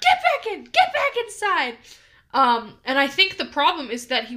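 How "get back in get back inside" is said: put-on screaming, higher and louder. Retelling yelling at a pet who walked out the door: imitating own screaming. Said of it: "I was screaming at him".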